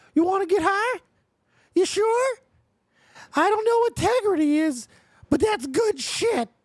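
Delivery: very high-pitched, loud, pushed cartoon voice. Asked to do a South Park character's voice: Towelie voice from South Park. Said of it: "do a Tally voice from South Park".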